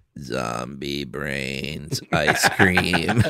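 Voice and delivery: put-on very slow, low-pitched child's zombie voice.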